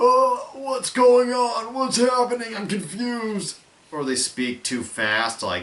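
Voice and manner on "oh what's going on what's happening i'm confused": very high, shrill, loud, strained, overacted mad. Showing a style of bad acting: mock over-the-top mad acting. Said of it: "they're always acting so mad".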